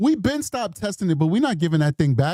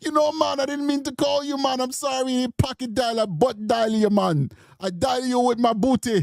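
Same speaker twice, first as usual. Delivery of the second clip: put-on, laid-on, pitched-up Jamaican accent; 5 semitones higher than usual. Retelling a phone call with their mother, imitating mother's jamaican accent. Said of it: "My mother got that Jamaican accent".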